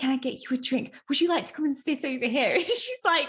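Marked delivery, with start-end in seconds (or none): 0.0-2.5 theatrical, pitched-up stage whisper. Retelling a scene from a film, speaker imitates a man whispering to a woman. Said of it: "like whispering behavior".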